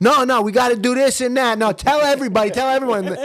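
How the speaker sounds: put-on New York Italian accent. Imagining their dad's first day at the bank, speaking as him in a New York Italian accent. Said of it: "very New York Italian sort of accents".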